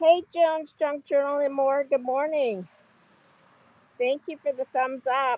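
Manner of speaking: muffled speech through a mask. Greeting a viewer and thanking them for the thumbs up, muffled through a mask. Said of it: "I sound funny because I'm wearing a mask".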